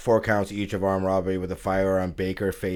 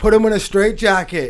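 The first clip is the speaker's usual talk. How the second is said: very high-pitched, loud shouted yell; 14 semitones higher, 9 dB louder than usual. Retelling what a fan in the stands did: imitating a fan yelling. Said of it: "the guy yells from the stands".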